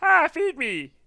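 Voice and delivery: put-on cat voice. Imagining the cat waking someone in the morning, voicing the cat. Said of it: "when the cat wakes you up".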